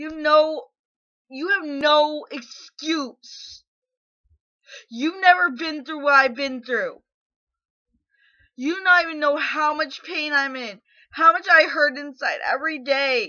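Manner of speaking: enraged, furious outburst, voice trembling with anger. Answering someone who said the babies weren't real: furious, shaking with anger. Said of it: "I'm so angry I can't even fucking cry".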